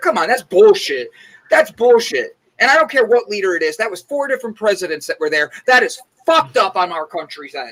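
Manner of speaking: heated, worked-up, increasingly wound-up rant. A speaker in a group discussion, getting worked up. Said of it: "now I'm just getting worked up".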